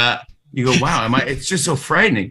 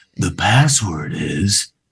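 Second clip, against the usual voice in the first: creepiest spooky tone, dropped very low; 8 semitones lower than usual. Player giving the password clue to the others, creepiest voice. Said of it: "I'm going to do it in my creepiest voice".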